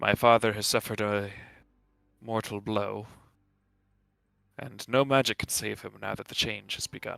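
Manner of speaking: solemn, grave. Voicing a daughter whose dying father is turning to stone: solemn. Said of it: "She responds with an air of solemnity".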